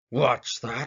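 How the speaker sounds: terribly gruff growling voice. Reading a story aloud, the bear replying to the rabbit, terribly gruff growl. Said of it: "growled a voice that was terribly gruff".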